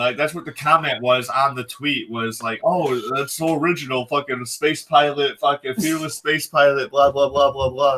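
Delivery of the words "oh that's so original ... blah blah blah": ordinary delivery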